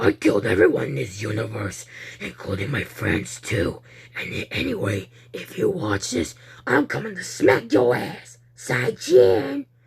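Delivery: very deep, sinister, extra creepy villain voice. Reading a story aloud, a monkey with glowing red eyes greets: extra creepy voice. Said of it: "Ho-Ho said in a creepy, creepy, extra creepy voice".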